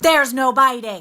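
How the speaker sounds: really mean, very loud. Showing how she scolded her kids for biting: imitating her own mean voice. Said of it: "said in a really, really mean voice, just like this".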